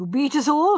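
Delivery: warm-hearted. Sir Henry replies to the speaker recalling their mystery game, warmly. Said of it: "said Sir Henry warmly".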